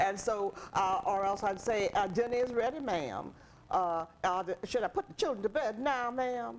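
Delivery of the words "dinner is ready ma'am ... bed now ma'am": American Southern accent. An actress demonstrating the accent she was taught for her roles: Southern accent. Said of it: "I had to have a Southern Adam, a accent too".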